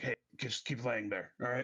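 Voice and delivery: whispering. Whispering down to a downed wrestler during a pin: whispering. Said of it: "I whispered down to Nova".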